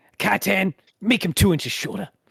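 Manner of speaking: grizzled, hard-boiled film noir detective voice. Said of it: "this guy is, like, grizzled noir detective".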